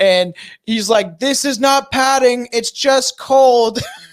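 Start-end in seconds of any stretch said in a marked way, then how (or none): 1.2-3.8 acted yell, high, loud and drawn-out. Retelling him sitting on a skateboard shouting to the camera, yelling. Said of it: "he's like yelling to the camera".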